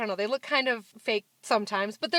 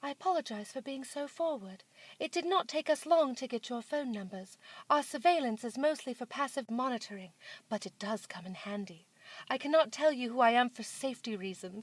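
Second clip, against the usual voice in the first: soft, posh, fancy British woman's voice; 6 dB quieter than usual. Acting out a strange urgent message you received, in a fancy British lady voice. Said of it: "fancy British lady voice".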